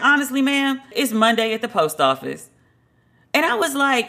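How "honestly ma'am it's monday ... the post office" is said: usual speaking voice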